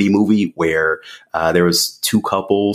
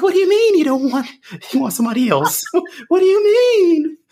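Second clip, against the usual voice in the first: voice shot up very high. Retelling his reaction when his partner wanted someone else: high-pitched voice. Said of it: "my voice got high".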